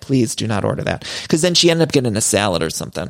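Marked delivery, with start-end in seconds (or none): 0.0-1.0 mock pleading, lower pitch. Voicing a diner's insides pleading with her about the soup: mock begging. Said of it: "just audibly begging her".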